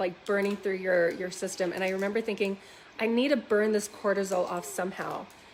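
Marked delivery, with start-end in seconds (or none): none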